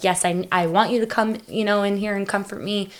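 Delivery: ordinary delivery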